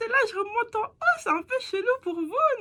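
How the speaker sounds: very high, tiny little voice. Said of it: "j'avais fait une voix toute petite".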